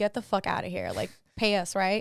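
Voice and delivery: mock exasperated, frustrated and fed-up tone. Retelling how the security guard told them off: imitating a frustrated security guard. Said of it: "frustrated with us".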